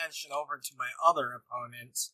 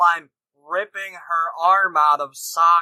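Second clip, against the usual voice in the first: plain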